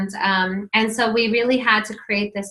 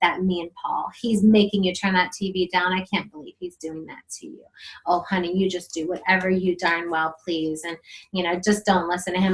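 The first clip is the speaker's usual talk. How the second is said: soft half-whisper, close and low; 3 semitones lower, 3 dB quieter than usual. Acting out half-whispering to a child against the other parent: acting out a half-whisper. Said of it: "I came and I whispered to him".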